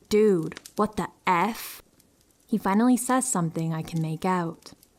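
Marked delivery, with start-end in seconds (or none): 0.1-1.8 play-acted, sternest possible voice, stern and slow. Retelling what was said to a man at the stall door: retelling own sternest voice. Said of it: "in my sternest possible voice".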